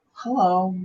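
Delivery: shy, timid, soft little hello. Retelling how they greeted people when younger: imitating own timid hello. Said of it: "I had this very timid".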